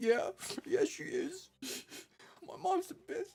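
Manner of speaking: mock tearing-up voice. Retelling a scene, the main guy answers the supportive others, imitating him tearing up. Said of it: "he kind of tears up".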